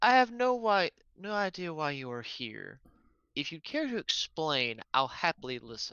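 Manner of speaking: mild, unthreatening, very gentle tone. A player voices his character, pistol kept down, as someone creeps into the room: very soft tone. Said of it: "he's going to say in a very soft tone".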